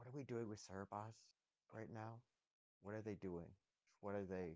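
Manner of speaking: soft, hushed stage whisper, kept down. Asking the group in character about Cerebos: half-whispering quietly. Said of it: "whisper a little bit lower".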